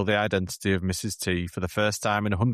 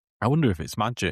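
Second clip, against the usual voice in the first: ordinary delivery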